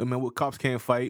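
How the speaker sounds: usual speaking voice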